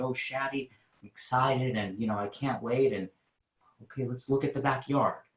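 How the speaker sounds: unsure, hesitant delivery lacking any certainty. Hiring advice, showing how not to talk: unsure, hesitant delivery. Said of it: "I'm not talking like this ... There's no certainty there".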